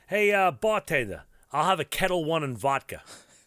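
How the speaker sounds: Staten Island–accented speech. Asked to redo it, the speaker orders a drink in a Staten Island Italian accent. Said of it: "do it in a more Vinny Goomba Staten Island Italian accent".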